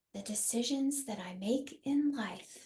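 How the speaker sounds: whispered. Leading a repeat-after-me affirmation; whisper. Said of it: "And now in a whisper".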